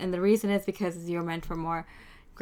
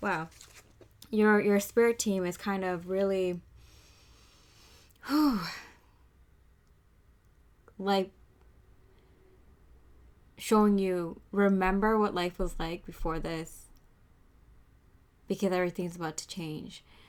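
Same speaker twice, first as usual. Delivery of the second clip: choked up, teary, voice catching. During a review session, the speaker gets emotional, choked up. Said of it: "I'm getting like choked up here".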